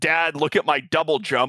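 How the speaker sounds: usual speaking voice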